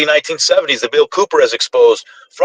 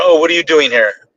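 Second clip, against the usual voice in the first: very aggressive, hostile, confrontational tone. Retelling how a man challenged the speaker's son, in a mock-aggressive tone. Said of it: "Like in a very aggressive".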